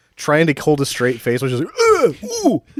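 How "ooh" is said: high-pitched, strained grunts sounding in pain. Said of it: "Sound like you're in pain".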